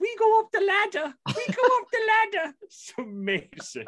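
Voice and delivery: put-on very high, broad, thick Scottish accent, child's voice. Quoting the artist's daughter from a track on his record, in a thick Scottish accent. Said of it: "with a thick Scottish accent".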